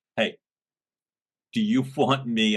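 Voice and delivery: speaking through laughter. Quoting a leader's line from a past office meeting, laughing while talking. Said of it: "I can't say it without laughing".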